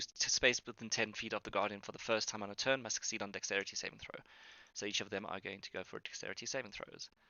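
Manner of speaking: hushed murmur. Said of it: "I need to stop, uh, whispering these rolls".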